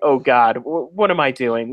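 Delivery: ordinary delivery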